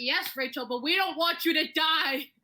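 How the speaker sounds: high, drawn-out scream. Retelling how a teacher screamed in front of the class: imitating someone screaming. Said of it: "screamed in front of the whole class".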